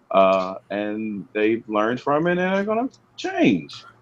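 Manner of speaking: unconfident tone, sounding unconvinced and doubtful.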